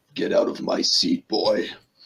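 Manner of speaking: deep, low, rumbling voice. Narrator voicing a figure behind Ivan's chair, deep rumbling voice. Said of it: "you hear a deep, rumbling voice from behind you".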